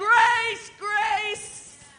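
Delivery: loud, high, ringing yell. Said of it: "And I said".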